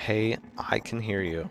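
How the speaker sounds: plain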